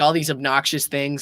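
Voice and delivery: ordinary talk, nothing marked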